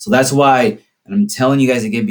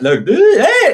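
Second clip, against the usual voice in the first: very high, squeaking voice cracking and breaking; 6 dB louder than usual. Explaining puberty, show how a seventh grader starts talking: squeaky voice. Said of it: "you would squeak all the time".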